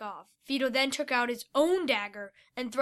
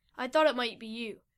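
ordinary delivery

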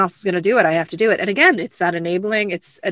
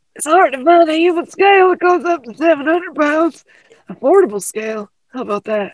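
put-on old man voice, higher and louder; 9 semitones higher, 6 dB louder than usual. Impersonating Chris talking about a scale: imitating Chris, sounds like old man. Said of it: "I just sound like an old man".

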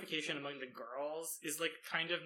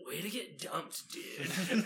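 nineties dude-bro delivery. Recounting what a random student tells a dumped classmate, in a 90s dude-bro voice. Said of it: "90s dude bro voice".

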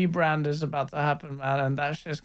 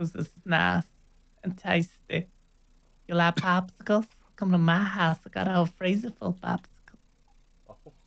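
fake elderly man voice; 3 semitones higher than usual. Joking around, doing the voice of the old guy from Family Guy. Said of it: "Are you trying to do that old guy from Family Guy?".

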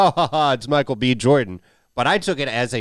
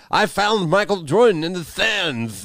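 pitched-up, slow cartoon duck character voice; 6 semitones higher than usual. Quoting a character from the movie: Daffy Duck voice. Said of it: "That was a good Daffy".

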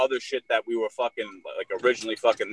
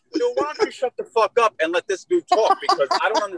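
put-on New York accent with very high pitch; 3 dB louder than usual. Retelling how he told the man to be quiet: imitating himself in a New York accent. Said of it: "the New York's coming at me".

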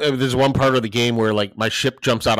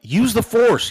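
mock shout, very high-pitched yell; 10 semitones higher than usual. A parent retells his daughter yelling while he plays a game: retelling a yell. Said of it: "yells like".

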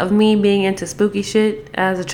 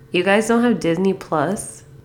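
most judgmental, heavily judging tone. Retelling what the oldest kid said, mimicking a judgmental tone. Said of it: "he says in the most judgmental tone".

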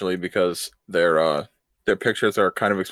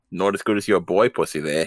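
imitated Australian accent. Retelling what someone said to them, repeat it in an Australian accent. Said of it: "but not as deep and in an Australian accent".

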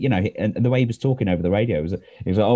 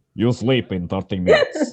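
put-on Russian accent, laid on, sing-song. Retelling a dad's bedtime-story rule, Russian accent. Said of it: "I don't know why I'm doing a Russian voice".

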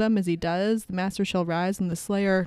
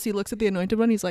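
normal talking voice

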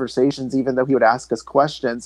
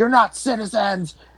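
put-on angry yell, pitched higher; 8 semitones higher than usual. Retelling how a counter-protester got in everyone's faces: imitating Ben yelling. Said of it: "asking us questions and yelling".

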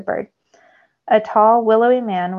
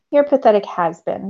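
usual speaking voice

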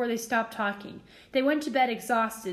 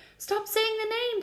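terrified, frightened whisper, much higher; 10 semitones higher than usual. Ron reacts as Harry paces, shaking, by the fire: terrified whisper. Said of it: "said Ron in a terrified whisper".

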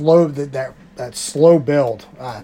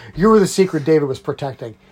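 ordinary talk, nothing marked

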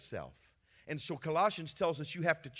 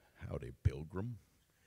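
very low, big Texan drawl; 11 semitones lower, 4 dB quieter than usual. Playing up a big Texan voice while addressing listeners, do a John Wayne impression. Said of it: "Get my John Wayne going on here".

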